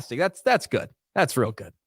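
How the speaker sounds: dry sarcastic mock approval. Reacting to his co-host during a sports discussion, sarcastic. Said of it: "I know I'm being sarcastic".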